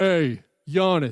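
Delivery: imitated deep-voiced yell. Retelling a veteran yelling at a rookie on the bench: imitating Greg Monroe's deep-voiced yell. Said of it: "Greg Monroe has a really deep voice".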